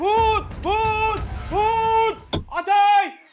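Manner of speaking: slow, drawn-out panicked shouting. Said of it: "আবার তুমি এমনি চিৎকার চেঁচামেচি করতেছো কেন".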